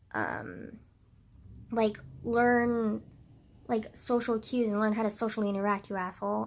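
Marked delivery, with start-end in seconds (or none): none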